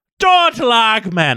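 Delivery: put-on Scottish accent. Trying out the voice of a Scottish character: attempted Scottish accent. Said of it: "Spears is supposed to be Scottish, right?".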